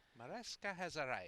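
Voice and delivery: put-on Scottish accent, announcer-style delivery. Commentating a game, announcing a player's arrival in a scottish accent. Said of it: "my Scottish accent?".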